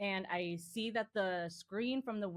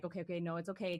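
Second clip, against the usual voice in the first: mock crying, tearful voice. Retelling reassuring words said after the cats escaped: imitating own past crying.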